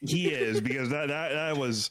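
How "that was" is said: laughing through the words. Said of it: "that was a terrible metaphor".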